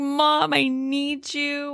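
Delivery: very slow, high, hysterical, pleading crying. Retelling a character's call to her mom, imitating someone crying hysterically. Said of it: "crying hysterically".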